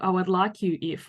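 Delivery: ordinary delivery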